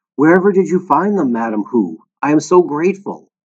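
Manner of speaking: joyful, delighted, grateful cry of delight. A woman thanks another for finding her lost pearls, exclaimed with delight. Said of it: "Flora Baumbach exclaimed with delight".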